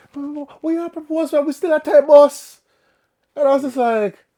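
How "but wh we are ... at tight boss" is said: acted, mad, confused, angry, raised high voice. Retelling a proposal, imitating the woman who got mad: imitating an angry woman. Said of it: "she got mad".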